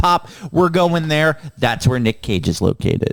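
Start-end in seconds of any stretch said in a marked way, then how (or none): none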